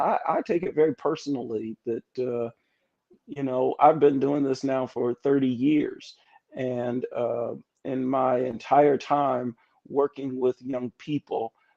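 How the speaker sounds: ordinary delivery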